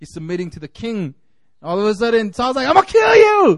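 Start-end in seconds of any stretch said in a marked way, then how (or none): 2.7-3.6 crazed screech, very high and loud. Retelling the Bible story, acting out crazy King Saul: imitating crazy King Saul. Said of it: "this is a crazy man".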